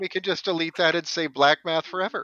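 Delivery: ordinary talk, nothing marked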